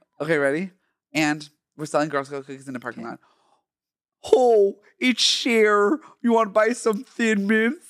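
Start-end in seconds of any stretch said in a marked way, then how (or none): 4.3-7.9 high-pitched put-on Minnesota accent. In a skit selling Girl Scout cookies in a parking lot; Minnesota-sounding put-on accent. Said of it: "why do you sound like you're from Minnesota?".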